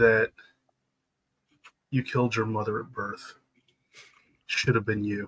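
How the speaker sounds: hushed, soft half-whisper. Voicing a father's voice echoing in a soldier's mind: half-whispering in a father's voice. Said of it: "my voice whispers out through the trees".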